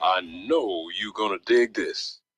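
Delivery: very low, deep, commanding radio voice of authority. Showing off a new voice on a radio station promo, deep voice of authority. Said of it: "That's my voice of authority".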